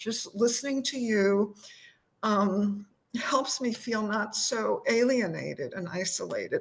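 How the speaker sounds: choked up, tearful, crying voice. Speaker talking to someone they have been listening to; crying. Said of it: "I'm crying".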